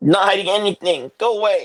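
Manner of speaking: small, high, tiny little voice. Voicing someone behind a locked door answering a player, small voice. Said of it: "a small voice on the other side say".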